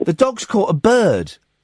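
usual speaking voice

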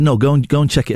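ordinary delivery

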